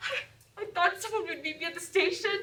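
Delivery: tearful, high crying voice, near tears. A character worn out from a whole day of travel speaks to another, crying. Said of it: "Don't cry! Don't cry!".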